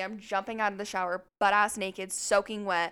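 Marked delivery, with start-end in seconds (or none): none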